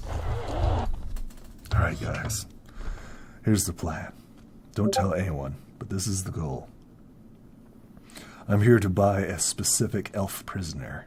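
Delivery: hushed, secretive whisper. The game master voices a character pulling the players into a huddle: whispering. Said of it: "he whispers to you".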